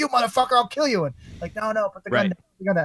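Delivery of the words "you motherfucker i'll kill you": mock angry yelling, much higher pitch. Retelling what a man yelled at people while holding a gun, retelling an angry yell. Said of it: "I'm yelling".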